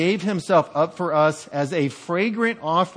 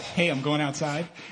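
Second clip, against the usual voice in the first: slow, mocking parroting voice; 2 semitones lower, 6 dB quieter than usual. Acting out a skit, repeating the other speaker's words: mocking mimicry. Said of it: "Have you ever been mimicked?".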